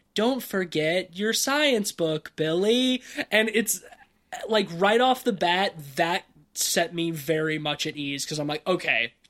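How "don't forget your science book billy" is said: high-pitched put-on talking toy doll voice. Retelling a commercial where the little doll speaks: imitating the talking doll. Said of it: "the little doll being like".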